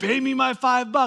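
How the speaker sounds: mock angry, insistent, high-pitched voice. Retelling a parable, the servant demanding five bucks: imitating an angry demand. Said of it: "He gets so mad".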